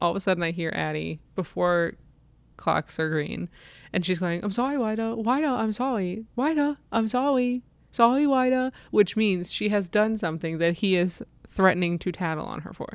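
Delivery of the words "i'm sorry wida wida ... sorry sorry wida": put-on child voice, shouting, higher-pitched. Retelling a child apologizing to her brother: imitating Addie shouting sorry. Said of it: "she's just pretty much shouting".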